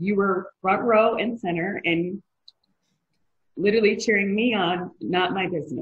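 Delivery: moved, teary voice close to tears. Thanking another speaker for cheering you on, getting emotional. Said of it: "And now I'm getting emotional".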